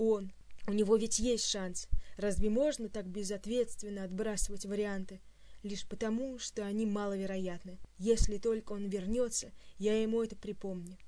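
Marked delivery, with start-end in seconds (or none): none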